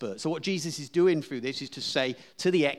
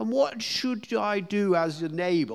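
exaggerated, very posh upper-crust voice, pitched high; 7 semitones higher than usual. Retelling what someone asked, in a posh Gordon voice. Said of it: "that very sort of posh".

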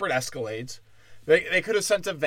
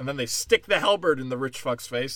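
ordinary talk, nothing marked

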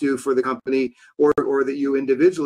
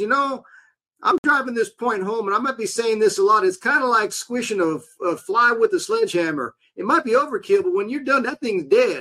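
put-on old-fashioned Southern accent, higher pitched; 8 semitones higher than usual. Retelling a point from sales books: Zig Ziglar Southern accent impression. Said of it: "he had this old kind of Southern accent. He kinda talked like this".

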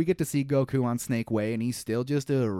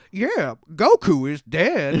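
weak put-on old master voice, louder; 3 semitones higher, 8 dB louder than usual. Trying a Roshi impression after another speaker: not very good Roshi impression. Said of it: "I'm I'm gonna try it now".

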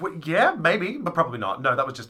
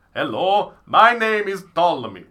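loud, raised, put-on Russian accent; 5 semitones higher, 6 dB louder than usual. Improvising an ancient Roman to question, as Ptolemy with Russian accent. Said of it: "you speak English with a Russian accent?".

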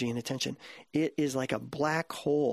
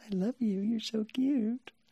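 put-on squeaky, high-pitched baby talk; 8 semitones higher than usual. Showing how people talk to a newborn: high-pitched squeaky parent voice. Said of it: "that kind of high-pitched, squeaky, parenty voice".

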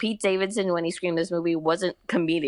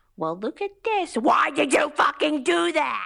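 put-on very high, shrill screaming rant; 10 semitones higher than usual. Describing how Adam Sandler screams, the speaker does a screaming Adam Sandler impression. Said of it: "Adam Sandler just screams when he's just like".

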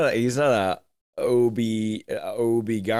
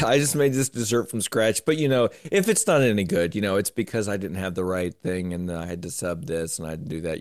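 normal talking voice

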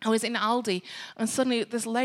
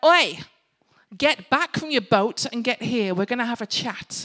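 stern, scolding mother voice, calling out; 4 dB louder than usual. Imagining being Jesus calling the disciples back from their boat, using a mum voice. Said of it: "I would have used my mum voice".

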